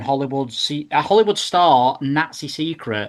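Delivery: ordinary delivery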